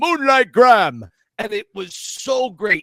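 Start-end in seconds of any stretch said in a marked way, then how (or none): 0.0-1.0 booming call, very loud. Retelling a movie scene, voicing a line in a James Earl Jones booming voice. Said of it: "he just has that booming voice".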